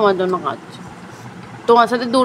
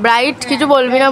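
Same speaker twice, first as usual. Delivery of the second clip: ordinary talk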